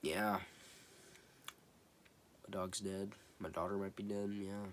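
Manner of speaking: put-on hushed, lifeless, soft, flat monotone. Imitating the movie's other actors, who aren't really acting: imitating flat unengaged acting. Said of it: "the other actors are just like".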